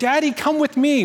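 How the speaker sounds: put-on high, little girl's toddler-like voice. Retelling what a two-year-old daughter says to her father: imitating a two-year-old daughter. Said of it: "That exact tone".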